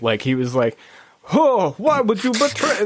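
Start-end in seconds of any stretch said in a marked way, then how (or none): 1.3-2.8 very high-pitched, clumsy attempt at a Russian accent. Retelling a Russian villain's line from a game: attempted Russian accent. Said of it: "I can't do that accent".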